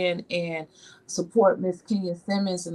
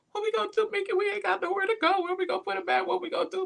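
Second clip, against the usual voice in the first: mock tearful, very high-pitched crying wail; 13 semitones higher, 4 dB quieter than usual. Retelling a phone call for help about a guest: imitating own past crying. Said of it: "I called Mickey crying".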